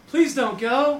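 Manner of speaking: mock, high-pitched, half-joking, half-meant pleading tone. Retelling what she said when he said he had to go, mock half-joking plea. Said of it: "you can hear it in her voice".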